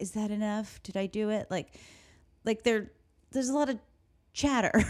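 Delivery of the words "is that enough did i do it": put-on mumbled delivery. Retelling what a character says during a murder scene: imitating mumbling. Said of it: "he's mumbling things like".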